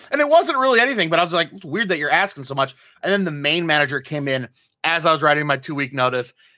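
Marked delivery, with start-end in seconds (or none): none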